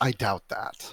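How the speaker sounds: put-on lofty, superior, arrogant, haughty dismissive tone. The narrator voices a crocodile humanoid replying to Bernadette, in an arrogant tone. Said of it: "In a in a arrogant tone".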